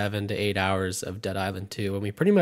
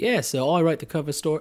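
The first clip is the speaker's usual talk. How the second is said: put-on English accent slipping in, pitched up; 7 semitones higher, 3 dB louder than usual. Kicking off a Dead Island 2 rundown for the host, put-on English accent. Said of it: "sorry, my accent".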